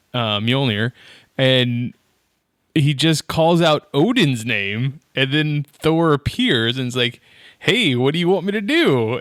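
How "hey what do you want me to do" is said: put-on pitched-up, very heavy American accent laid on thick. Retelling how Thor appears when summoned: Thor's very American accent.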